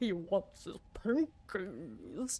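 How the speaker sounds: very slow, failed deep put-on voice, cracking. Trying to do a voice that goes lower: failed low put-on voice, cracking. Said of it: "Sometimes I can make my voice go lower. This is not one of those moments".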